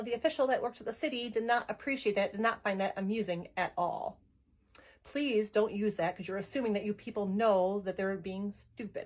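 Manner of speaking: usual speaking voice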